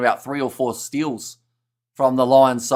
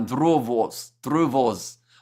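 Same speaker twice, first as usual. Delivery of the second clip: Russian-sounding pronunciation; 4 dB quieter than usual. Guessing a quiz answer aloud, with an accidental Russian-sounding accent. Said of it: "Why do I sound Russian when I say it?".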